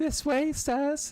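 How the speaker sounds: very high-pitched voice. Player voicing game dialogue speaks as Tataru showing guests in, in Tataru's high voice. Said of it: "I can't do her high voice".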